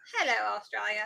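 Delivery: botched, failed Australian accent. Greeting viewers in australia: bad australian accent. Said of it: "I can't do accents".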